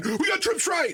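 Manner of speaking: acted nervous shouting. Imitating the linebacker he did not fear, the one who yelled: imitating a nervous linebacker yelling. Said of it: "the guy that yelled".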